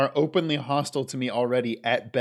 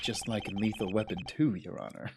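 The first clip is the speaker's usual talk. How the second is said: voice brought right down, lowered and hushed; 4 semitones lower, 9 dB quieter than usual. Voicing a character addressing the judge in court: lowered voice. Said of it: "lowers voice".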